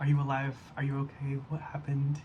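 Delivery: normal talking voice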